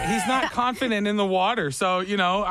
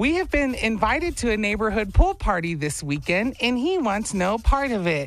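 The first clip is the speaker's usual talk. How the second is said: put-on girly, girl-like voice. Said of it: "You hear his girl voice".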